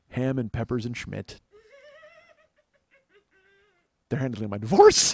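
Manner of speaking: very high, cracking up, laughing through the words. Delivering a joke, laughing while talking. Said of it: "I gotta stop making myself laugh".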